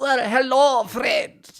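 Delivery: put-on strong French accent. Reacting to a cooking video, repeating the host's greeting: imitating Jean-Pierre's French accent. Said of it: "didn't expect him to be that French in the accent".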